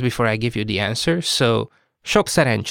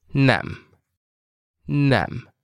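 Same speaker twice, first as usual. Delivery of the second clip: slow, deliberate, clearly broken into syllables. Showing a learner how to say the word: said slowly, broken down. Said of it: "Let's break down this word slowly now".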